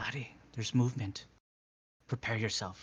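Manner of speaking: hushed half-whisper. Warning a companion in character of movement: half-whispering in character. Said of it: "I'm gonna whisper back to Evander".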